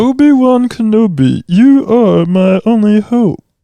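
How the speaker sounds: shrill, loud, very high cartoon alien voice. Saying a Princess Leia line as Marvin the Martian. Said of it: "say a Princess Leia line as Marvin the Martian".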